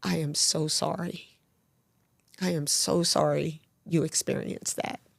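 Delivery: play-acted tearful voice, speaking through tears. Retelling comforting a grieving woman while crying: retelling tearful words. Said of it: "I'm crying and I said".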